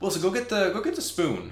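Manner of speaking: high falsetto voice. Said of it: "he looks at Wilson and says".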